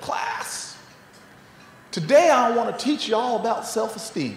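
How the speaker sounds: butchered, badly done put-on Southern American accent. Recalling a teacher addressing the class on the first day of school, butchered southern accent. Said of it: "forgive me for butchering that accent".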